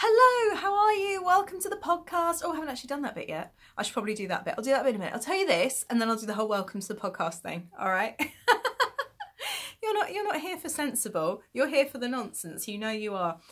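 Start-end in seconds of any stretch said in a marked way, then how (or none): 0.0-2.4 high, loud, bright, cheery sing-song delivery. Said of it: "I was like".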